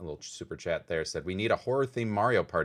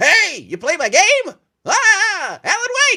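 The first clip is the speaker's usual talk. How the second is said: squealing, booming, very high, loud goofy clown voice; 12 dB louder than usual. Imagining the game's creator running up to a player, ridiculous clown-wig guy voice. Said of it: "this ridiculous guy in a rainbow clown wig".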